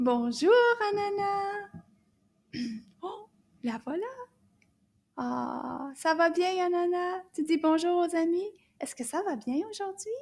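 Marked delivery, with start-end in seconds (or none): 0.0-1.7 nice loud friendly voice, louder. Saying bonjour to Anana so she can join the class, in a nice loud voice. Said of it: "in a nice loud voice".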